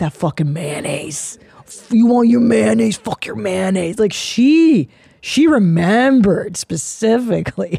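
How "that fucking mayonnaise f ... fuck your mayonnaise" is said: furious, fed-up cursing rant. Retelling a mother's grudge about mayonnaise: imitating an angry mother. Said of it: "She's like".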